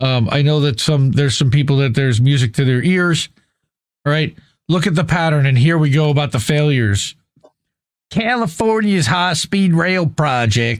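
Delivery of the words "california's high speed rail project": slow, drawled Southern US accent. Speaker listing project failures slips into an accent: Southern accent. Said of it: "I don't know why I said that in Southern accent".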